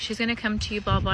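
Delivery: normal talking voice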